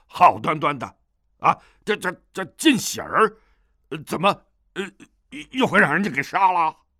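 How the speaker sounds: gruff, coarse, rough man's voice. A man speaking from outside the door; gruff, rough man's voice. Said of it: "一个男子粗声粗气地说道".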